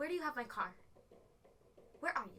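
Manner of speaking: small, cross, angry tiny woman's voice. Retelling a phone call, the speaker quotes his mother, imitating an angry tiny woman voice. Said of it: "angry, like tiny woman voice".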